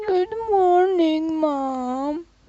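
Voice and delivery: very high whining, dragging out the last word. Asked how she would whine good morning, the speaker imitates it; imitating a whiny good morning. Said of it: "How'd you whine good morning?".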